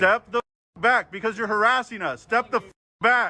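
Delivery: high, heated angry yelling. Telling a person who came close to stop harassing and step back: yelling. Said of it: "why are you yelling at me?".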